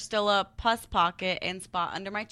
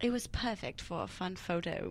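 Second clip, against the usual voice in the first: put-on British accent, hushed to a whisper; 3 semitones lower, 9 dB quieter than usual. Speaker reads the rest of an article aloud as a British accent impression. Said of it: "My best impression of a British accent".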